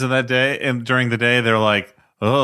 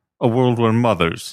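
speaking with jaw not moving, clenched. Following a note from another speaker, an actor repeats the line: jaw not moving. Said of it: "Don't move your jaw at all".

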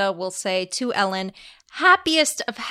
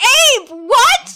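piercing, very high and loud shriek; 9 dB louder than usual. Retelling shouting from the audience at a friend on stage: imitating own scream. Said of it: "And I'm screaming".

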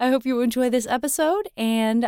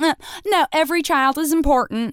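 put-on American Southern accent; 4 semitones higher than usual. Speaker mocks people who say every child is important, imitating a Southern accent. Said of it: "no reason for me to use that accent".

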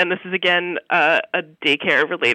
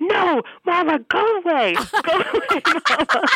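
acted-out, very high, very slow, drawn-out child scream; 11 semitones higher than usual. Retelling how a child reacted at daycare: imitating a child screaming.

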